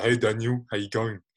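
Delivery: put-on dopey voice. Retelling a dream, voicing Patrick's words in Patrick's really dopey voice. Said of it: "he's talking in like his really dopey voice".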